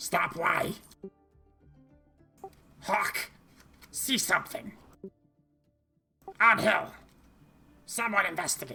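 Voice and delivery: high-pitched goblin creature voice. Running a game scene where a goblin looks up at her, goblin voice. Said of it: "hear the goblins talking to each other".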